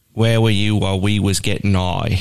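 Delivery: imitated Cockney accent. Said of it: "a Cockney accent everybody was singing it in".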